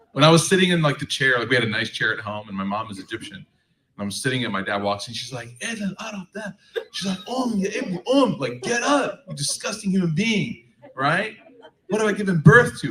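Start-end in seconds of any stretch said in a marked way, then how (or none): 5.6-12.9 put-on yelling, higher. Retelling how mom scolded for sitting in the chair: imitating mom yelling. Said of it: "she starts yelling at me".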